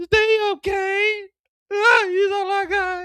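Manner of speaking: sobbing, very high, slow crying voice. Retelling how Jannard reacted to his brother's farewell: imitating Jannard crying. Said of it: "Jannard crying".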